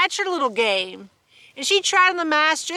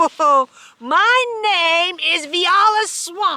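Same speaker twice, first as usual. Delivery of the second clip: scratchy, high, drawn-out voice, slow and loud; 5 semitones higher, 6 dB louder than usual. Narrating the lady who opens the door on the kids: scratchy Viola Swamp voice. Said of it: "said the lady in a scratchy voice".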